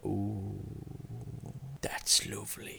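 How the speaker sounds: deep, breathy, sensual purr, hushed and whispered. Retelling purring to their father when he grabbed them, mock deep, sensual purr. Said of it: "in a deep, sensual voice, I purred to him".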